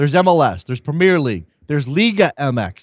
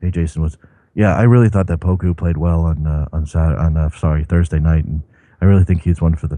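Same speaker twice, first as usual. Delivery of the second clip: caller voice, close on the receiver; 11 semitones lower than usual. Imitating a regular caller who phones in very close to the phone: Washington impression. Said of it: "I don't have Washington's voice".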